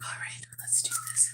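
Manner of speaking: hushed, quiet whisper. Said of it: "I'm talking softly 'cause the baby's sleeping".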